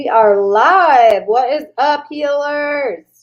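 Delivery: booming, very loud, very slow, stretched yell. Greeting viewers as the live stream starts: yelling. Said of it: "Why am I yelling?".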